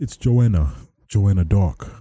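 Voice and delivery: put-on poorly done English accent. Imagining Joanna Dark answering someone asking who this is; Joanna Dark English accent. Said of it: "that was my best English accent".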